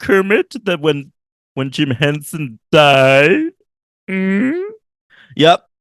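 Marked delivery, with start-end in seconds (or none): 0.0-3.5 slow, with the final word drawn out. Show host speaking before revealing it is really him, Kermit the Frog voice. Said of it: "That wasn't Kermit, believe it or not".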